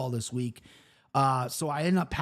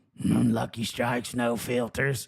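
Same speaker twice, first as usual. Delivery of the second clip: awful voice, slow and drawn out; 4 semitones lower than usual. Retelling a liquor store customer's order, imitating his awful voice. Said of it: "with the worst voice ever".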